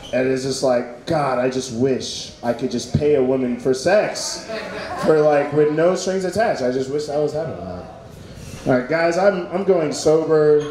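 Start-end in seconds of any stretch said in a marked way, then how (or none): none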